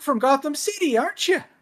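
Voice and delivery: put-on pitch way up, Canadian accent. Describing a version of a masked hero, the speaker acts out his line, in a high Canadian Batman voice. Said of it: "Batman who has a higher voice, like the Canadian lifeguard".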